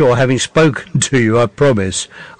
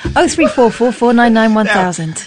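fake female voice, higher pitched; 9 semitones higher than usual. Reading out the phone number when asked: put-on female voice. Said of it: "And in a female voice".

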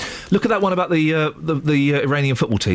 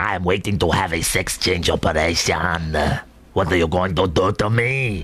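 put-on Iranian accent; 8 semitones lower than usual. Repeating a bit after being asked what accent it was, in a put-on Iranian accent. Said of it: "That's Iranian".

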